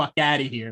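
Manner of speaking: usual speaking voice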